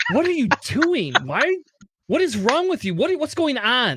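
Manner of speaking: imitated confused tone. Retelling yelling at the TV during Andor and her reaction, imitating a puzzled question. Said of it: "And she's like".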